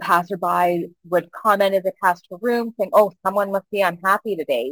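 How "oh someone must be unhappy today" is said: mock flippant, careless tone. Retelling passersby outside a screaming woman's room, imitating a flippant passerby. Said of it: "Really a flippant comment".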